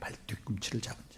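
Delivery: soft whisper, rising at the end.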